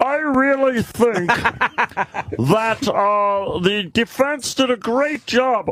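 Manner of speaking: very high, squeaky cartoon alien voice. Describing a woman on a channel after a trial, imitating her Marvin the Martian-like voice. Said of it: "She sounds like the Mar- Martian".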